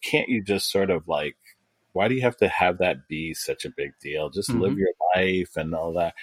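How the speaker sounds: usual speaking voice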